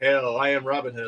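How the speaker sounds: flat monotone put-on actor voice. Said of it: "monotone, flat".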